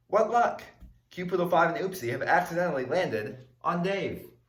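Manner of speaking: ordinary delivery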